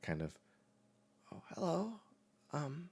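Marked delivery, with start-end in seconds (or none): 1.3-2.9 very high, drowsy, groggy, just-woke-up voice. Voicing a character just woken up by another player: just woken up, groggy. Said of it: "barely open eyes stare back at you".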